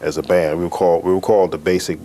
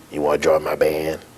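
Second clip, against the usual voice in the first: put-on gruff little voice, lower pitch; 2 semitones lower than usual. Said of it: "the gruff little voice".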